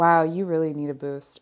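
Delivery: ordinary talk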